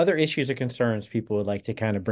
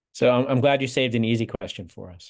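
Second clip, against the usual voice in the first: usual speaking voice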